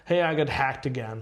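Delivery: put-on casual, chill delivery. Retelling a girl in the line for the IT guy, mock-nonchalant. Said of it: "she says it like so nonchalantly".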